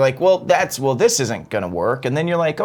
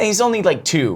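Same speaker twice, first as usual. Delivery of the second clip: ordinary delivery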